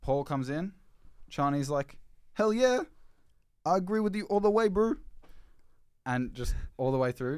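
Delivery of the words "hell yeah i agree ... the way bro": put-on awful New Zealand accent, very high and loud. Acting out a book character agreeing with Paul: terrible New Zealand accent. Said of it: "that was a terrible New Zealand accent".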